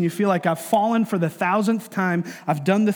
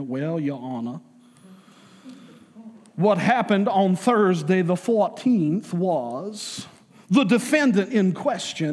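put-on accent from Savannah. Acting out a Southern prosecutor addressing the judge, put-on Savannah accent. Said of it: "with his best Savannah accent".

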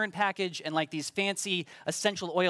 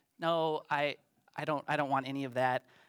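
put-on sheepish, lower and slower; 2 semitones lower than usual. Telling a story, recalling their own reply to a car salesman: retelling a sheepish reply. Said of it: "sheepishly told him".

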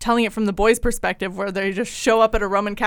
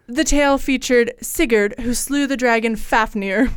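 grand, regal movie-trailer narrator announcer voice; 3 semitones higher than usual. Showing the other speaker how to say it, in movie announcer style. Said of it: "do it like announcer style".

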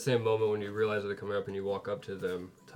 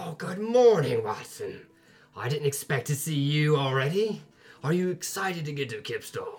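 thrilled, very excited, high and swooping voice; 6 semitones higher, 4 dB louder than usual. Voicing a half-orc chef who greets a friend, very excited. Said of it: "she gets very excited".

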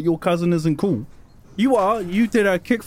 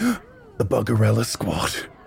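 muttering under breath, much lower; 8 semitones lower than usual. Spotting her posse walking away from the school, the speaker mutters under breath. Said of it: "I'm just under my breath".

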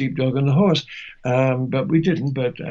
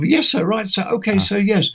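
put-on pitched-up, near-Cockney accent; 7 semitones higher than usual. Recalling answering a colonel in a role, in his father's voice. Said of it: "So this voice came out".

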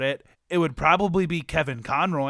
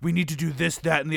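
put-on gruff superhero voice.

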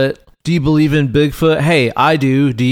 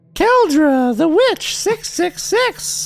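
put-on witch voice. Doing a witch bit, in Keldra's witch voice. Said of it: "I'm stuck in witch voice".

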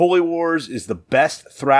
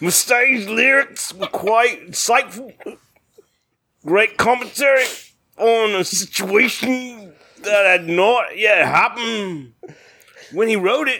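put-on British accent, pitched up, played straight; 9 semitones higher than usual. Reading a listener's message aloud in a put-on British accent. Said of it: "let me do my British accent".

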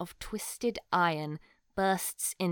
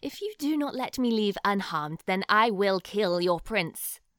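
icy, cold, menacing voice, raised; 6 dB louder than usual. A possessed knight holds a hostage and coldly demands to be let go, threatening to kill him. cold threat. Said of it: "And then [name] extends a hand towards [name]. She starts to hiss something unintelligible. / [name] speaks. / She holds her sword to his throat and says".

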